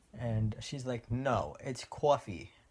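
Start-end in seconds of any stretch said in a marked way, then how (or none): 1.1-2.5 put-on slow New Jersey accent, "coffee" said cwaw-fee. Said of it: "She's from New Jersey".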